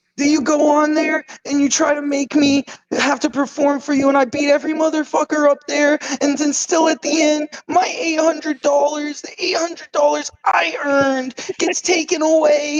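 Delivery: very high-pitched, whining, complaining tone. Mocking how the listener delivers arguments, in a mock-whiny Morty voice. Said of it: "Like whining at Rick about something".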